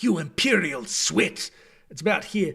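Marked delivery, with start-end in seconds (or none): 0.0-1.5 bass dark elf voice from the throat's front. Showing off his voices for game characters: Valen Dreth voice. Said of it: "Valen Dreth is my go-to".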